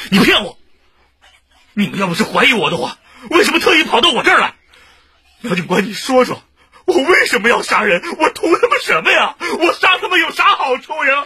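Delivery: high, loud frantic shouting. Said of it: "你轻点儿".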